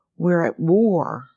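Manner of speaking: loud, sudden, announcing delivery. Recalling a friend's father listening to the radio: retelling a loud announcement. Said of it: "in this loud voice".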